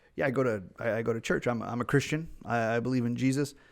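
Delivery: ordinary delivery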